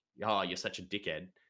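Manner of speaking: ordinary talk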